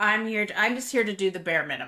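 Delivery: sly, mock-sarcastic delivery. Quoting a sitcom character who is sarcastic on the sidelines: sly sarcastic Garrett voice. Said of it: "sly voice that's, like, being sarcastic".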